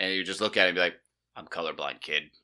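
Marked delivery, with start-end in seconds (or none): 1.4-2.2 very deep put-on dog voice. Voicing a small terrier looking up at its owner, very deep dog voice. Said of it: "it would be this very deep voice".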